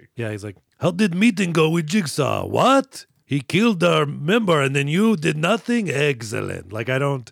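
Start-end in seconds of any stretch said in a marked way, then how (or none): 0.8-6.7 bad put-on Russian mobster accent, loud, slow. Retelling a movie scene, imitating a Russian mobster. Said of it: "I can't do a Russian mobster".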